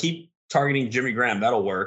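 ordinary talk

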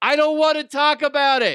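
very high, loud, dumb, stupid put-on voice. Trying out a line for an opening, in a stupid voice. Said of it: "as I'm doing the stupid voice".

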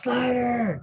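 high-pitched celebratory yell. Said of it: "I yell out".

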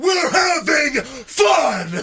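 very high-pitched, loud scream. Retelling a moment in a match when he screams to the camera, imitating Ryback screaming. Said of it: "Ryback screams to the camera".

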